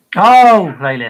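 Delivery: shouting. Reacting aloud just before apologizing to the guys: shouting. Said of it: "Sorry for shouting".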